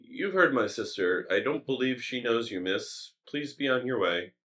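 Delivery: kindly, gentle yet firm, stern, protective fatherly voice. An older elf man sends a woman away from his sister, gentle but stern fatherly voice. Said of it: "In a very like gentle but stern fatherly voice".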